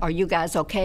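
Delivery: ordinary talk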